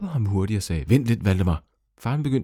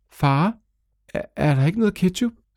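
nervous, anxious, high voice with rising pitch; 9 semitones higher, 3 dB louder than usual. A son asks his father a question, nervous. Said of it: "Spurgte Valdemar nervøst".

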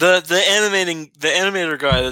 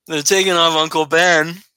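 normal talking voice

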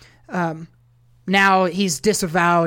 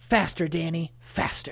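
dramatic, drawn-out whisper. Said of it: "that dramatic ass Kevin Costner voice".

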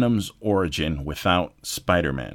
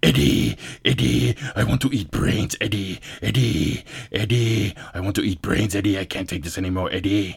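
insistent put-on character voice. Retelling a movie scene where a creature begs to eat brains: Venom voice. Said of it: "He's fucking".

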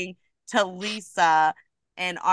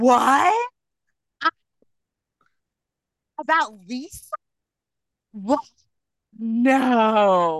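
mock theatrical shock, gasping, swooping, very slow; 5 semitones higher than usual. Imitating a castmate's denial when asked about lisa: imitating an overly dramatic denial. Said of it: "so dramatic".

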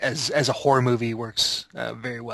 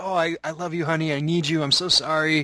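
put-on earnest, romantic, heartfelt, pitched-up delivery; 5 semitones higher than usual. Retelling a man hanging out his window, blocking traffic; mock heartfelt plea. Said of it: "he's like doing this heartfelt".

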